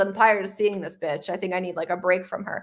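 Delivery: ordinary talk, nothing marked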